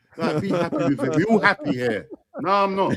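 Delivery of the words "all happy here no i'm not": ordinary talk, nothing marked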